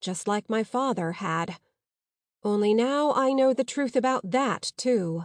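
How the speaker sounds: plain reading voice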